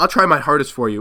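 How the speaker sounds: sarcastic, mock-sincere tone. Retelling his answer to a woman who told him to leave strangers alone, retelling own sarcastic reply. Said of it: "obviously sarcastically".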